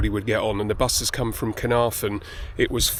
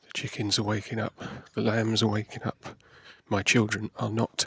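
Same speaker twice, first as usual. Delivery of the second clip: speaking very quietly. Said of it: "I'm speaking very quietly because it's half past six".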